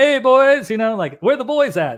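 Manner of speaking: put-on loud, high, friendly Canadian accent. Speaker imitates a guy from Canada hopping out of his truck, in a Canadian accent. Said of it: "he's got the Canadian accent".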